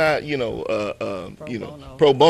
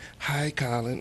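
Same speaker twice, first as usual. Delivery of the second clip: soft, slightly breathless put-on little-girl voice; 8 dB quieter than usual. Telling how a little girl came up at drop-off: imitating a little girl's breathless voice. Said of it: "this little breathless voice goes".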